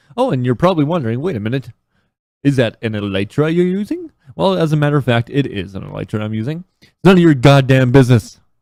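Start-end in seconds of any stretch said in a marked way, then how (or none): 6.8-8.4 sudden, loud, raised yelling outburst. Speaker recording a game video answers an imagined viewer question: yelling. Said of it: "I'm sorry for yelling".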